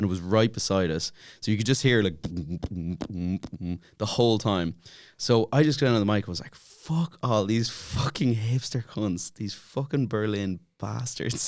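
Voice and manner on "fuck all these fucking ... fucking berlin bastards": strong put-on Dublin accent, drawn out. Retelling getting on the mic at a festival: big dublin accent. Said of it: "with a big Dublin accent on me".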